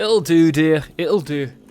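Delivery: loud, clumsy, bad put-on Scottish accent. Commenting on how the output looks, in a bad Scottish accent. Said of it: "That's a really bad accent".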